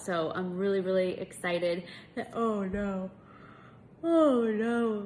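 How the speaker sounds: speaking mid-yawn. Late at night, recording a message for babe, yawning. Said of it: "I'm already yawning".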